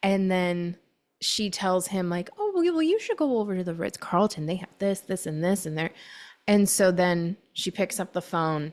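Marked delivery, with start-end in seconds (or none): 2.4-5.9 mock feigned clueless tone. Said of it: "she's playing dumb".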